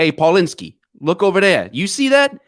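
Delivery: put-on Boston accent. Acting out a bystander pointing at a crash: slipped into Boston accent. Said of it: "I slipped into Boston".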